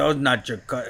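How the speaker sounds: put-on Siberian accent. Retelling what the club owner told the dancers: imitating his Siberian accent. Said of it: "this is his accent".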